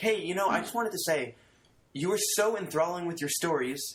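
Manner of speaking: high put-on female voice. Retelling what a woman told him after the show, imitating a woman's voice. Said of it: "And I'm doing like a female voice".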